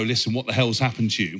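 ordinary delivery

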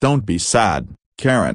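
ordinary delivery

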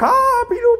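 high-pitched commentator voice, very high, slow, drawn out.

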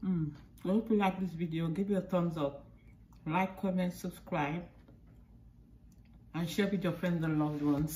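speaking with mouth full of food. Closing a cooking video while eating the doughnut, talking with mouth full. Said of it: "I'm eating, my mouth is full".

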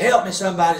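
mock hollering call. Retelling a standoff where the held man cried for help: imitating someone hollering. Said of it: "he's hollering".

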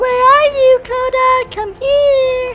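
high-pitched, crazy fangirl voice. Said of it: "I'm your crazy fangirl".

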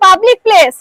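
loud, high-pitched, angry shouting.

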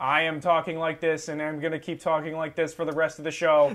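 dead-level, flat robotic monotone. Talking like a robot for the rest of the show: flat monotone robot voice. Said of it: "talking in a completely monotone voice like this".

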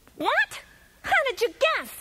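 very high yell with wildly swinging, swooping pitch. Narrator reads the magician's reply after Cookie guesses his name, yelling. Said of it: "yelled the magician".

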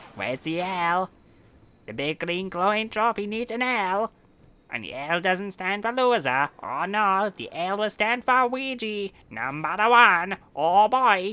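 high-pitched, loud cartoon voice. A gamer talks through their play in a Luigi voice. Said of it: "I'll stop with the Luigi voice now".

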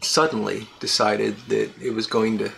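ordinary delivery

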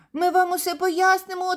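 very high-pitched, quavering, trembling voice. Reading a story aloud, the little flame answers an angry character, trembling voice. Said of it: "тремтячим голосом відповів вогник".

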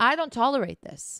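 plain

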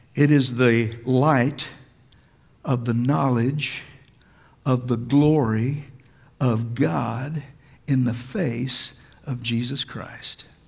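slow, low, deliberate, broken-up halting delivery. Speaker reading verse 6 aloud to listeners, saying it slowly. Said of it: "I'm going to say it slowly".

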